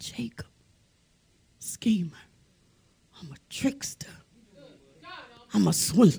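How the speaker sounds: stunned, shocked, breathy whisper. Retelling how a man answered when asked his name: acting out a shocked whisper. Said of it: "in shock and realization and whispering, he said, he whispered".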